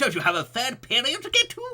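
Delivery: very high, very loud cartoon old wizard voice. Trying out voices for a character, a performer uses a Disney old man voice. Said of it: "like a Disney old old man voice".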